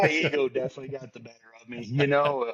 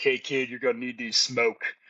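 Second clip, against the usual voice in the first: big, burly, beefy tough soldier voice. Recalling a man from an armored truck who approached him, in a big burly voice. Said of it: "with like a big burly voice".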